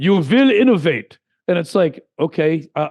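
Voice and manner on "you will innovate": loud put-on Russian accent. Arguing about free speech and entrepreneurship, in a put-on russian accent. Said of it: "I'm going to say it was a Russian accent".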